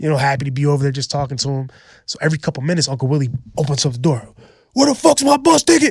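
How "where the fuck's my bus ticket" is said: mock unhinged outburst, very high-pitched and raspy. Telling a story to a listener, acting out Uncle Willie going crazy. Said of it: "going crazy".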